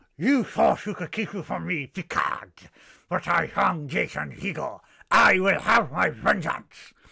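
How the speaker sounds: high, very loud, rasping alien voice, shouted. Taking up the suggestion to try one, the speaker performs a line: Ferengi alien voice. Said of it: "You try and do a Ferengi voice".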